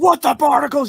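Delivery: shrill, very high, loud shrieking yell. Quoting a TikTok audio going around, Mr. Krabs screaming impression. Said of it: "He's screaming".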